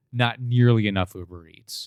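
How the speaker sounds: usual speaking voice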